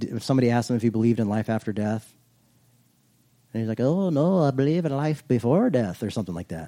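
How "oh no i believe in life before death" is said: slow, horrible put-on Irish accent. Quoting a guy's reply when asked about life after death, in a bad irish accent. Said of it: "That's my horrible impersonation of an Irishman".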